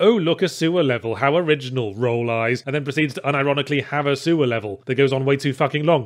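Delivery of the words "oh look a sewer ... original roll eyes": ordinary delivery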